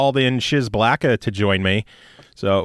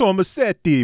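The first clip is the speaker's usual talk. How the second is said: tomasetti in Italian accent, pitched up; 7 semitones higher than usual. Discussing a name, pronouncing Tomasetti with an Italian accent. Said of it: "I was going with the Italian".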